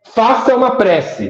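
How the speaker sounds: commanding voice. Retelling a voice he heard, the speaker imitates its commanding tone.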